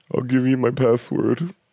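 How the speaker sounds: wimpy, high, wussy pushover voice. Imitating Brian handing over his password: wussy Brian voice. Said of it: "Is that what men in Milwaukee sound like?".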